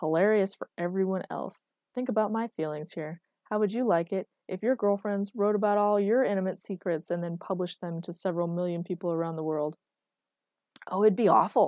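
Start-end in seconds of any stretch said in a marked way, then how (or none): 10.9-11.7 delighted, gleeful, raised voice. Answering a friend's complaint and teasing him, gleefully. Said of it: "said [name] gleefully".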